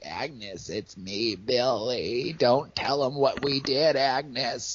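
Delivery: creepy, high, drawn-out voice. Retelling how the killer talks to the girls in a film: creepy Billy voice. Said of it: "so creepy".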